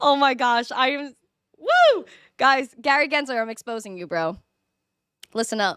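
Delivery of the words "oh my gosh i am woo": drawn-out, overjoyed, emotional gush. Thanking whoever sent them Litecoin, overjoyed. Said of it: "I am so happy right now".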